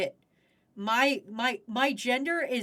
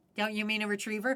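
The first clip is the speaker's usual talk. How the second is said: ordinary talk, nothing marked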